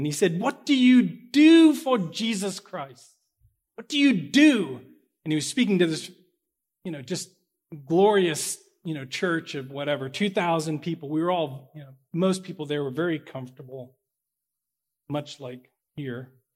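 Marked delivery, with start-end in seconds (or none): 0.4-4.8 put-on loud, high-pitched, big English accent. Quoting a man speaking to his church of 2,000 people: English accent. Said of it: "in this wonderful non-Pittsburghian English accent".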